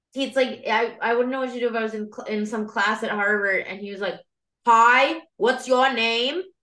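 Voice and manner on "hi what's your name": put-on Massachusetts accent at a slower pace. Imagining a Harvard classmate asking her name, old Massachusetts accent. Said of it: "I'm losing the accent a little bit".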